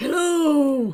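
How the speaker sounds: put-on elderly man's voice, hello drawn out. Greeting the audience, who asked for it, in old man voice. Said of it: "You can make it up to us by using the old man voice".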